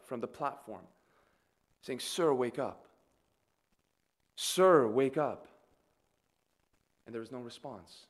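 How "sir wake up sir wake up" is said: very slow, drawn-out, imploring begging tone. Describing news footage of a woman urging a man to wake, retelling an imploring plea. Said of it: "she implores that this man would wake".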